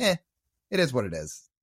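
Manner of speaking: dry, sarcastic, fake nonchalant indifference. Pretending not to care whether the player signs: sarcastic mock indifference. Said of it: "for those who couldn't tell the sarcasm".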